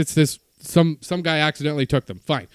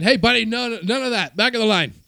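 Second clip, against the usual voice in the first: mock group hollering together, high, scolding tone; 7 semitones higher than usual. Telling of a man cutting the coffee line, the speaker is retelling a group yell. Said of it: "we're all yelling".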